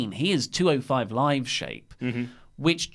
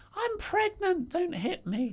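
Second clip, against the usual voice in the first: very high-pitched put-on lady's voice; 7 dB quieter than usual. Retelling a wrestler grabbing a mic mid-chase: put-on lady's voice. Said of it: "I did a lady's voice there".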